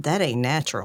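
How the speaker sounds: very low, quiet under-breath mutter. Storyteller voicing Johnny for the players, muttering under breath. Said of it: "He mutters under breath".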